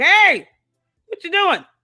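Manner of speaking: high-pitched, half-yelled call, kinda yelling. Showing the call to the kids when it gets too quiet: imitating own yelling. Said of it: "I'm kinda yelling like".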